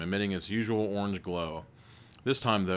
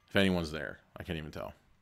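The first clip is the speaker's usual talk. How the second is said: ordinary delivery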